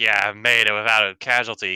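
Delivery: ordinary talk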